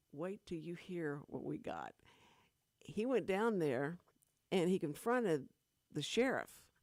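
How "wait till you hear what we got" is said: mocking, snickering, laughing taunt. Retelling how others reacted behind his back: imitating people snickering. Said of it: "laughing, snickering behind his back and going like".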